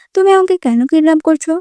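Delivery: plain reading voice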